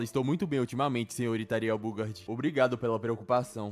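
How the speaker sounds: ordinary delivery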